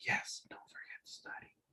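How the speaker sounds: very quiet, soft, breathy murmur, near whisper. Explaining word differences to a listener, the speaker demonstrates a murmur: soft murmur. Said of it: "And murmur".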